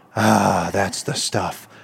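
deep, gruff voice, unhurried and drawn out. Acting out a woman's reply after smoke is blown in her face, deep, gruff voice. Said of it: "with this deep, gruff voice".

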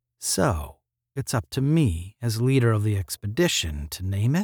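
usual speaking voice

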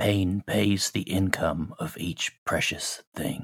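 quiet mutter under the breath. After a satyr's remark about the fight, a player's character speaks under the breath. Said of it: "I just say under my breath".

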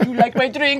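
put-on high Eastern European accent. Playing a mother offering her drink, Eastern European accent. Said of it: "Why am I talking with an accent?".

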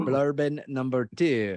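put-on French accent. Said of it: "Become French all of a sudden".

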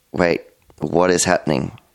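usual speaking voice

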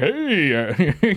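put-on laid-back voice. Imitating a store worker who sounds like a film actor: Seth Rogen voice. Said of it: "kinda sounds like Seth Rogen".

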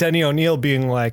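ordinary talk, nothing marked

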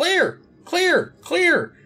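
very high, loud, bird-like squawking yell. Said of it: "this time he's yelling".

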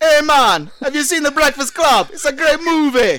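put-on loud, high Jamaican accent. Voicing the Terminator in a read-aloud script: Terminator with Jamaican accent. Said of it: "Why are you talking like that?".

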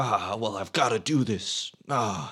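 deliberately bad delivery, words drawn out. Retelling a movie scene where Cage leaves his wife: shitty Nicolas Cage impression. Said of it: "my shitty Nicolas Cage impression".

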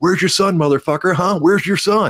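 mock vicious jeering yell, very high and shrill. Retelling the meanest thing said to the fighter: imitating Tony shouting. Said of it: "Tony got mean".

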